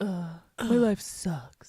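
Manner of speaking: sulky, mopey emo-style groaning voice. Friends inventing a voice for a character who looks like he's been crying: emo voice. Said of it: "You just give him an emo voice".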